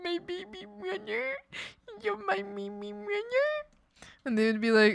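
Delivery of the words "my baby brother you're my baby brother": blubbering fake sobbing, very high-pitched. Acting out imagined words beside a brother, mock crying. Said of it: "I would cry with my brothers".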